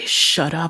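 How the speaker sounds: muttered through gritted, clenched teeth. Voicing a character annoyed by the crowd: muttering through gritted teeth. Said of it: "gritting her teeth and, like, muttering".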